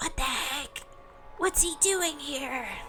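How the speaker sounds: put-on high, hushed half-whisper, accent dropped. Seeing the man with the cane step in, half-whispering. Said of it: "forgotten your accent while whispering".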